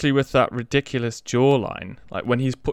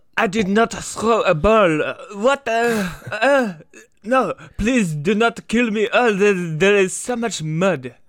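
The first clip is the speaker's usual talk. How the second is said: put-on movie-style French accent, pitched up; 9 semitones higher than usual. Asked to do an impression of the French accent, speaking in a French accent. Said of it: "can you do an impression of the french accent for me".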